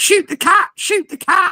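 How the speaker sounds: mild squawking parrot cry, twice. Retelling how a parrot reacted as soon as it saw the cat, imitating a shouting parrot. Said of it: "he shouts".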